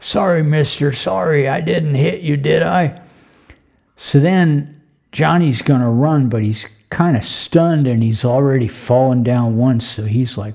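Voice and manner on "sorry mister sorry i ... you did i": put-on whiny, plaintive, pleading voice of an old drunk. Telling a story, a wino in an alleyway speaks to Johnny in a put-on plaintive whiny wino voice. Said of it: "this kind of plaintive, whiny old wino voice".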